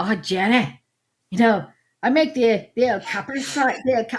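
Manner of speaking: put-on mash-up of Scottish and Northern accents. Quoting Hugh, appointed to run the castle kitchen, talking to Jenny: imitating Hugh's Scottish-Northern accent. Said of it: "I'm doing a Scottish and, and a Northern accent".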